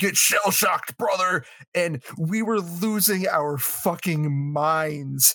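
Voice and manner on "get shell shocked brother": rowdy imitated yell, held back. Retelling headbutting a friend in a game with others: imitating a yell. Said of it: "just yelling".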